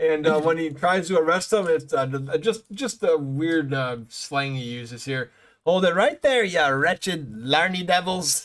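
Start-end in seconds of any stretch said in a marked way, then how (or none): 5.6-8.5 put-on slight touch of Irish accent. Recapping a cartoon episode, the speaker quotes a character making an arrest: slight Irish accent. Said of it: "so in an Irish accent a little bit".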